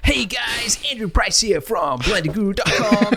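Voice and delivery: pumped, salesy radio-host delivery. Recalling how he first talked on his videos, in a hyped-up radio voice. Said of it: "everything was hyped up".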